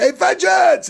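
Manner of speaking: high, raw, acted-out screaming call. Retelling a movie scene where a character shouts a name: imitating someone screaming. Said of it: "And he's just screaming it".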